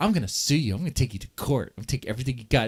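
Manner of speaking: fast, unhinged, menacing, crazed-sounding rant. Recounting what a woman said, imitating someone sounding psychotic. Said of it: "She sounded psychotic".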